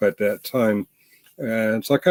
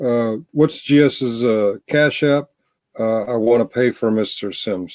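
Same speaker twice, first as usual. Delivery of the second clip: ordinary talk, nothing marked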